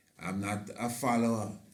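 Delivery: plain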